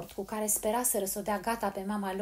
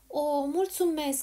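cheered-up, bright exclamation with pitch rising; 6 semitones higher than usual. Handed a bunch of flowers, the speaker exclaims, brightening. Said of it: "exclamă Polly înseninându-se".

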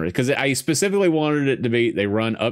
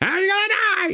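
very high, unhinged, crazed, taunting voice. Recalling a favorite moment from the first film: Billy's high-pitched voice-changer voice. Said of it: "his voice gets all high pitched".

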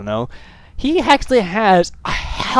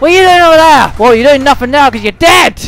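slipping into a heated, angry tone; 8 semitones higher, 8 dB louder than usual. Speaker addresses an opponent who is now dead in the game, angry. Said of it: "I'm getting into anger mode right now".

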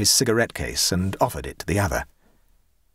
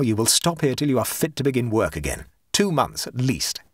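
plain

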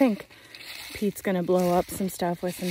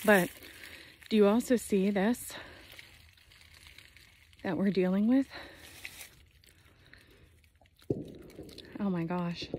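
breathless, winded voice. Speaker showing their land's property line, out of breath. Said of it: "I'm out of breath".

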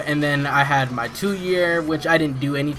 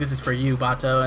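ordinary talk

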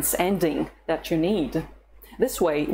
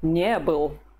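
не stressed, был left light. Showing the russian past of to be, with stress on не. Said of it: "the stress can be on the negative particle not instead of the verb itself".

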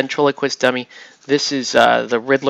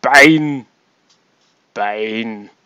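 each word held long and slow, film-star style; 3 dB louder than usual. Looking at a Bane figure: Schwarzenegger voice. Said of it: "any excuse to do like Schwarzenegger".

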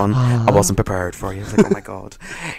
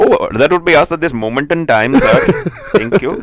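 put-on Indian accent, pitched up higher; 7 semitones higher, 4 dB louder than usual. Asked to translate a phrase in an indian accent, saying it in an indian accent. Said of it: "translate it in an Indian accent".

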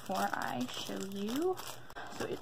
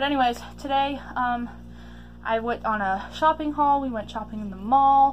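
very loud, breathless, winded talking; 3 semitones higher, 8 dB louder than usual. Speaker starting a shopping haul video after running up from the basement, out of breath. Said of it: "I sound out of breath because I just went to the basement".

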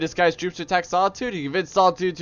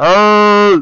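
booming, very loud shout, "hey" stretched out; 3 semitones higher, 9 dB louder than usual. Testing how a hand near the mic changes the sound: really loud "hey". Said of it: "That probably was really loud".

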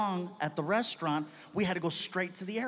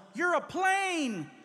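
mock, shrill, very high-pitched yelling; 10 semitones higher than usual. Retelling how a friend pushed the speaker forward: imitating a friend yelling. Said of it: "he yells out".

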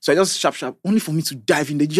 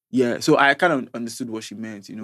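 normal talking voice

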